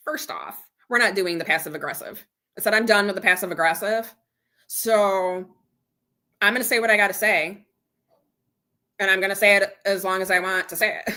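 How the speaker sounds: ordinary talk, nothing marked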